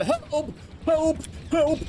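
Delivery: high, loud, panicked yelling.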